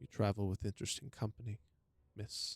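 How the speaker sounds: hushed whisper. A guard addresses the traveler, loud enough for a companion to hear, in a whisper. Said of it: "The guards would say to you in a whisper".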